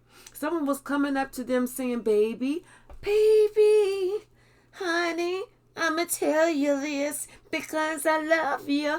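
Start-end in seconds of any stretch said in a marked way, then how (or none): 2.0-9.0 very slow, light, high grandmotherly coaxing voice. Retelling what someone said while handing over a cup, put-on grandmotherly voice. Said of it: "trying to sound like that old grandmotherly type".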